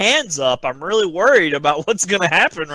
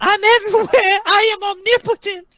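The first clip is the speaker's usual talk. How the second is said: very high-pitched, goofy voice. Acting out a fighter answering officials who send him to his corner: imitating Anderson. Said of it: "He's just like".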